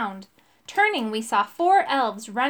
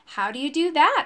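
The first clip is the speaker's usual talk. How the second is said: ordinary delivery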